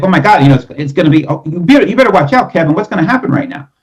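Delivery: tense, fast, high-pitched, pressured staccato delivery. Contrasting with a relaxed tone, the speaker demonstrates a pressured staccato delivery. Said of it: "if I was to talk like this".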